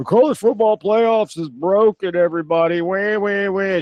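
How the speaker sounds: play-acted petulant, whiny, complaining voice, wah-wah. Mocking people complaining into microphones: imitating whiny complaining. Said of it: "I'm sick and tired of everybody getting on their little, you know, microphone".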